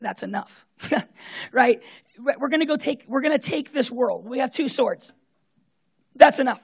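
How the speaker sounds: loud, drawn-out, pointedly sarcastic, acted delivery. Retelling a reply to the disciples, retelling a sarcastic reply. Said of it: "Jesus pretty sarcastically goes".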